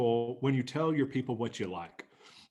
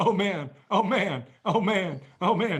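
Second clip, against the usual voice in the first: high, loud, slow, repeated distressed exclamation. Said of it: "Noah was going".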